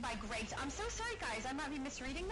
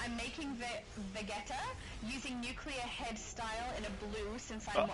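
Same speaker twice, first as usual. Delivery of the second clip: ordinary talk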